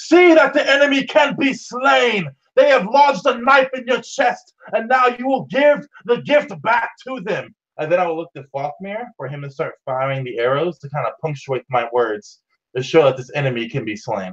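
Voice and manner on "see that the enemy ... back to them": very high, rallying battle shout. Voicing a character calling down a pit to slaves: shouting in character as Aranil. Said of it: "he continues shouting to them".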